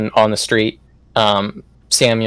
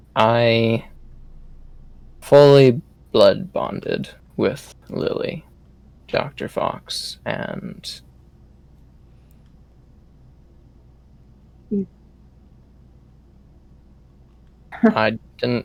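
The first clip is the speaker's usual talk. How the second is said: lowered, hushed, almost sorrowful whisper; 5 dB quieter than usual. A character answers dr. fox about his decision, in a lowered, almost sorrowful tone. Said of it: "his voice is going to lower into more like almost a sorrowful tone".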